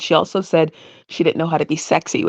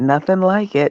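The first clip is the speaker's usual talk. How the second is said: put-on sarcastic tone. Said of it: "the sarcasm between the two of them".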